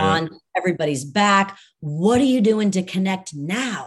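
ordinary talk

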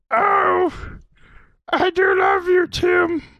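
very high, lingering, drawn-out declaration. Doing an impression of Anna saying a voice message. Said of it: "I do a very good impression of her".

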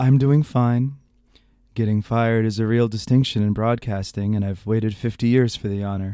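close-miked, lulling radio storyteller voice. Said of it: "do my appropriate, uh, Garrison Keillor voice".

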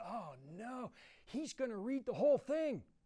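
very high, loud, carrying stage whisper. Recalling an old man in church leaning to his wife, retelling a loud stage whisper. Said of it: "in a stage whisper".

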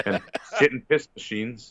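ordinary talk, nothing marked

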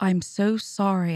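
plain

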